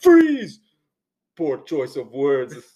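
big, belted, loud with swooping pitch. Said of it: "you have to sound like Arnold Schwarzenegger if you're gonna play Mister Freeze".

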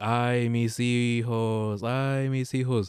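long, mournful, grieving wailing cry. Retelling what people heard near the lake, imitating a wailing cry. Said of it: "her famous cry goes like".

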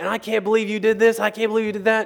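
acted-out high-pitched, shrill, loud screaming rant. Retelling how a man burst into the room screaming at them: retelling someone screaming. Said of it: "started screaming at me".

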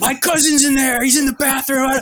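high, rushed, loud screaming. Chased out of a Starbucks, retelling own screaming in the plaza. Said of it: "I'm screaming in the fucking plaza like".

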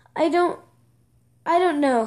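ordinary delivery

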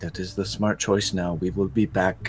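quiet whisper, very low volume. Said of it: "I whisper this very quietly to Templeton".

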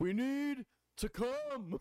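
very high-pitched, very slow, dragged-out voice. Asked for a Bernie Sanders impression: Bernie Sanders impression. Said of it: "my Bernie Sanders".

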